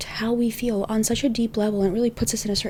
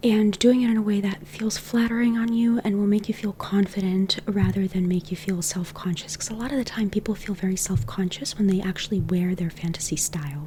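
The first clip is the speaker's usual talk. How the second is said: whispering. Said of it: "This is why I whisper".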